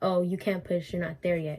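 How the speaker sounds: mock curt, unfriendly tone. Retelling what the nurse said about pushing: imitating a nurse's not-nice tone. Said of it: "I'm over here impersonating it".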